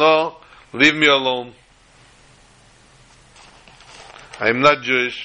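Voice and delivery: put-on Israeli accent. Retelling a man's reply to a Lubavitcher who approached him; strong Israeli accent. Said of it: "in his very, very prominent Israeli accent said".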